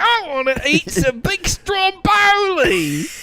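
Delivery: put-on Australian accent. Trying to mix two accents, which comes out as an Australian accent. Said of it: "if you mix those two accents, it's an Australian accent".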